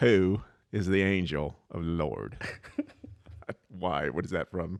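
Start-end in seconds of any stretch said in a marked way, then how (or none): 0.0-2.4 loud, over-the-top, exaggerated, thick country accent. Asking the other speaker to repeat a phrase, showing it in an exaggerated country accent. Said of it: "say in the most country accent you can".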